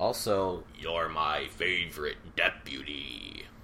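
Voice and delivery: loud, belted, put-on monster-like creature voice. Host signing off to listeners, in a Zerg-like voice. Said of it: "Is that your Zerg voice?".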